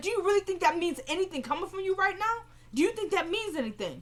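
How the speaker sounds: high-pitched, scornful, disbelieving tone.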